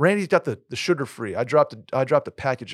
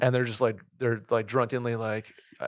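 plain

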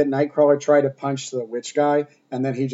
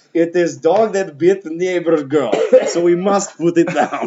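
loud, slow put-on Russian accent, words spaced out; 3 semitones higher, 5 dB louder than usual. Joking about putting down a dog that bit a girl: put-on Russian accent. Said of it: "That's your Russian".

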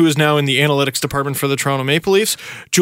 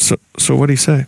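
acted, mock sheepish tone. Acting out people walking up to him afterwards, with a mock-sheepish question. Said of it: "sheepishly walk up to him after and go".

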